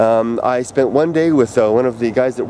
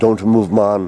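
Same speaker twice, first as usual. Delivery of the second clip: put-on low, deep, husky Jamaican accent; 4 semitones lower than usual. Retelling a pickpocket's words in a crowd, in a husky deep Jamaican voice. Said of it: "in these perfect Jamaican tones, I hear I hear this man's husky, deep voice say".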